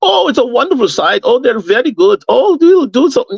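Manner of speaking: heavy, dripping sarcasm, mocking. Recounting Thomas Müller's comments from last week, mocking Thomas Müller's sarcasm. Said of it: "you can hear the sarcasm in his goddamn voice".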